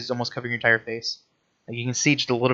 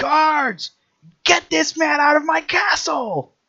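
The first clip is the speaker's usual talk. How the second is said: very high, very slow, commanding drawn-out shout; 6 dB louder than usual. Voicing a castle lord calling his guards during a fight: yelling. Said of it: "He just begins yelling".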